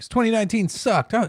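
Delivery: put-on high, loud, excited kid yell. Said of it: "He starts screaming".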